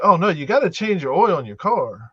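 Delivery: offhand, casual, matter-of-fact, of-course tone. Retelling advice a man gave after hearing of a Vegas wedding: mock matter-of-fact tone. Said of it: "he kind of said it like".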